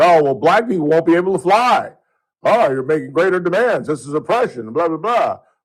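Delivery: put-on high-pitched, screaming, complaining voice. Mocking how Democrats would object to ID rules: imitating Democrats screaming. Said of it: "I never heard the Democrats screaming".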